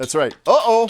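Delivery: ordinary talk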